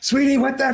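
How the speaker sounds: high, drawn-out, exasperated outburst.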